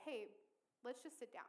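normal talking voice

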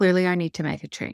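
curt, clipped, terse, firm delivery. Showing the tone of self-talk about needing a change, clipped and terse. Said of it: "It's just a little clipped, a little terse".

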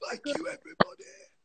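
hoarse, husky, dried-out, worn-out voice. Imagining how she'll sound ending a DJ set tomorrow, in a husky, dried-out voice. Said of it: "Good husk".

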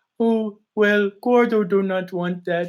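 goofy put-on high dog voice. A speaker shows the voice they use for a dog-based character, in dog voice. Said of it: "Anytime you hear me talk like".

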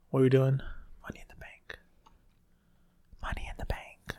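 whispering. Watching Money in the Bank on TV with another person, whispering. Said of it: "I don't know why I'm whispering".

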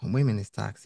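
ordinary delivery

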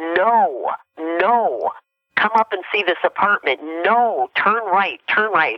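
high, drawn-out screaming. Retelling a voice in the head that screamed at the speaker: retelling a voice screaming. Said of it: "screamed at me".

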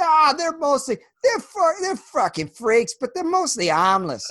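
put-on thick broad Boston accent, high-pitched and swooping. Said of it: "even thicker than, like, a cartoon Boston accent".

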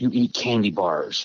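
put-on whisper. Telling a joke about a boy answering his mom: imitating a whisper. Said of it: "And he whispers to her".

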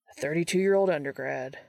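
plain

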